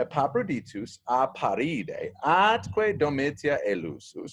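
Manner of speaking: ordinary talk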